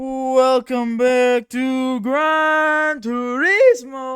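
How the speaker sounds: voice cracking. Welcoming everyone back to Gran Turismo, the speaker's voice cracks. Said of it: "that was horrible voice crack".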